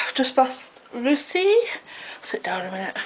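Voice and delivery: slow, winded speech, catching breath between words. Back from a walk, sitting down for a minute, out of breath. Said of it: "I'm out of breath".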